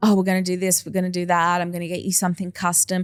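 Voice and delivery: mock, fast, gushing, keen-as-beans eager enthusiasm. Retelling a stylist's voice notes to a friend, imitating an eager voice. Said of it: "so keen, keen as beans".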